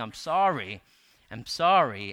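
acted, loud, very slow, repeated sobbing. Recounting breaking down in the office before the elders, re-enacting own sobbing apology. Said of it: "I was just like sobbing and saying".

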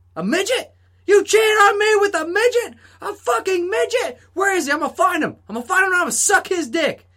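very high, shrill, outraged yelling. Retelling a man on the phone at McDonald's; retelling a yell into a phone. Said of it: "he's like".

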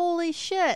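slow, high, stunned voice stretched out. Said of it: "I was like".

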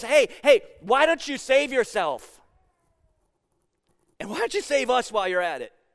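snide, scornful, mocking sarcasm. Retelling a crucified criminal's taunt to Jesus: sarcastic. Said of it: "he says it sarcastic enough".

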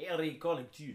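put-on, mock Polish accent. Deciding a celebrity's name should be said a new way, fake Polish accent. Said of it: "we should do it with a Polish accent".

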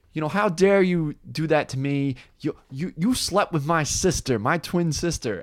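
indignant, angry yelling in a put-on woman's voice. Retelling a movie scene where a woman confronts Adam Sandler, imitating her yelling. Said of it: "she's yelling at him like".

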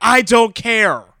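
high, very loud screamed retort. A player's character, told it's Hightower, screams a reply: screaming back. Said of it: "I scream back".

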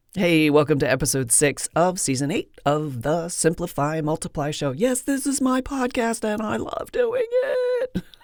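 silly, playful, goofy swooping sing-song. Welcoming listeners to a podcast episode in a goofy mood. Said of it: "I'm in a goofy mood today".

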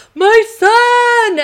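play-acted very high overjoyed shout, "son" stretched. Retelling a father recognizing his son who came back: mock-overjoyed. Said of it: "he's so happy".

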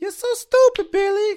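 shrill, very loud, belted character voice. Doing a film character's line, then naming it: Rosie Perez impression. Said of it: "that's my Rosie Perez impression".

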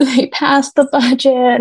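put-on sobbing. Telling how she answered her sister-in-law, reenacting sobbing. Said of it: "I'm like sobbing".

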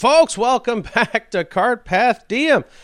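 laughing through words. Welcoming listeners back to the show, laughing while talking. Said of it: "look at me laugh as I say the name".

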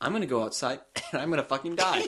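dismissive, sardonic, scoffing delivery. Acting out Carl answering his mom: imitating Carl. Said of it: "he goes".

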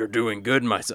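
drop into a deep man's voice. Retelling what Igor says to the player: deep-voiced Igor voice. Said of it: "deep-voiced man that's like".

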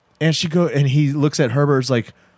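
plain

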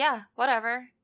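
put-on flat, emotionless, unbothered voice. Retelling a character's reply in a goblin ship: imitating flat emotionless reply. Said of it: "She was just zero emotion about it".

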